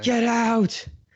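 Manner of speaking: very high, frightened, ghostly shout. Retelling the voice heard in the red house, imitating a frightened shout. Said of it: "it's almost more frightened than like angry, but it still shouts this".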